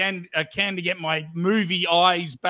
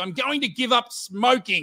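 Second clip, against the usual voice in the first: heavy, thick, put-on Russian accent; 4 semitones higher than usual. Retelling a street interview with a woman: imitating a thick Russian accent. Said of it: "she had a thick Russian accent".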